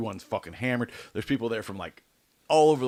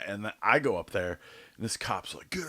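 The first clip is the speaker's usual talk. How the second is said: normal talking voice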